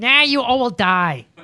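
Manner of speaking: put-on strange Korean-sounding accent, high, slow, drawn out. Joking about a leader posting on Twitter: imitating Kim Jong-un's weird accent. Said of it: "But his accent, it comes out really weird".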